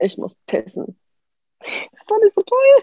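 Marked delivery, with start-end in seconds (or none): 0.0-1.0 mock dead-flat, half-whispered, bone-dry monotone. Retelling what the person guarding them finally said, imitating a flat, dry monotone. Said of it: "so ganz monoton, ganz, ganz trocken".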